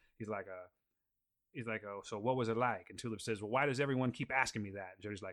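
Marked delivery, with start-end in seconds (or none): 1.9-2.9 put-on Louisiana Cajun accent with twang. Retelling a line from a comic, speaking it as a character who asks a question of someone. cajun accent, put on. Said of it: "he clearly has a Cajun accent".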